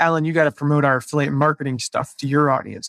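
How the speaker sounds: ordinary delivery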